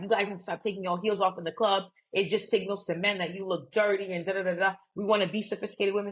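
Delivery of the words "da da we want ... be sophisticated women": normal talking voice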